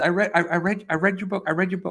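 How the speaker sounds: mock trembling, shaky, overwhelmed voice. Retelling a fan approaching the speaker about their book, imitating a shaking fan. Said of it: "she starts like shaking".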